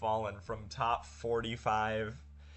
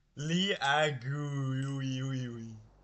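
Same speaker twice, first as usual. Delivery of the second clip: very slow robotic text-to-speech voice, each syllable dragged out; 3 semitones higher than usual. Copying how text-to-speech pronounced a name: imitating text-to-speech voice. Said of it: "I said it exactly like how T T S said it".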